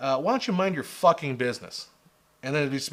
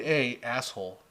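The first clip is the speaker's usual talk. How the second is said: ordinary talk, nothing marked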